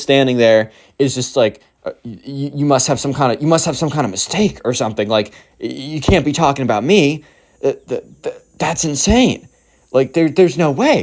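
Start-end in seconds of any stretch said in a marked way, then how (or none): 1.8-11.0 put-on stunned, stammering kid voice, higher. Retelling how a kid reacted when a mall cop called him: imitating a stunned, stammering kid. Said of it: "the emo kid is practically speechless".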